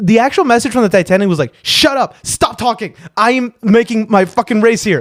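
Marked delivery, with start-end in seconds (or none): 1.6-5.0 angry, fed-up, swearing brush-off tone. Retelling the Titanic's actual message to the Californian: imitating an angry reply. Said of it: "he was actually pissed".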